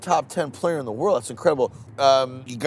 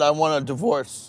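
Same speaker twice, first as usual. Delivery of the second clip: normal talking voice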